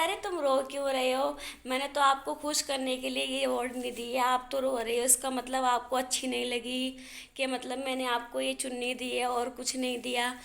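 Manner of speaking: plain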